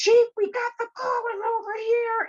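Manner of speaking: mock, shrill, very high-pitched police shouting. Retelling how the police called out on arriving: imitating officers yelling. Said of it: "and they yelled".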